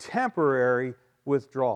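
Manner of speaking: hard stress on the word "temporary". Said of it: "Emphasis on the word temporary".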